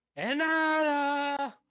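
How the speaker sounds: yelling. In a role-play scene, a character searching for inanna yells her name. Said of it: "I yelled once".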